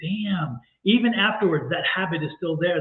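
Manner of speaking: plain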